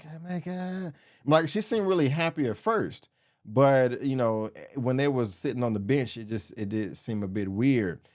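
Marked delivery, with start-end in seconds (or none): 0.1-0.9 soft, half-whispered stage whisper. Describing an awkward couple on a bench, imitating someone half-whispering. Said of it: "she kept whispering".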